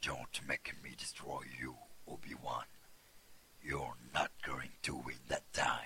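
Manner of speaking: very low, deep villain voice with dropped pitch. In a voice sample reel, the performer reads a line: Darth Vader-style voice. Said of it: "un peu à la Dark Vador dans Star Wars".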